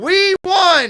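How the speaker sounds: very loud, high hollering shout. Celebrating a win, yelling out to someone in tennessee. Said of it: "I'm yelling at her in Tennessee".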